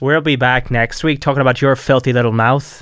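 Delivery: threatening, menacing Northern Irish accent. Showing off an accent with a sign-off line, menacing Northern Irish accent. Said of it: "That is very, very good, mate. Threatening as well".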